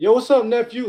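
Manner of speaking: way-up high, very high-pitched voice. Showing how your voice changes around your nephew, in a higher-pitched voice. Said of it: "your voice go up in tonality".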